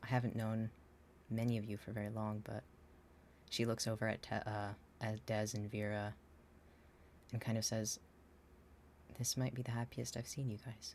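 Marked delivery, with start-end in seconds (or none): 9.2-10.9 quiet, soft-spoken voice. In a role-play, a character looks over at two group members, speaking quietly. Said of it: "She's she's speaking quietly".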